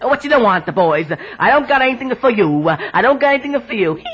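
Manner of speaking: very low man's voice, put-on Italian accent. Showing a host how their husband does the Italian guy, husband's Italian guy voice. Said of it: "He sounds like this".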